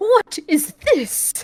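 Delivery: put-on English accent, very high and loud. Show a friend how funny Johnny Yong Bosch sounds in JoJo, Johnny Yong Bosch doing an English accent. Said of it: "hearing Jonghyun Bosch in like an English accent".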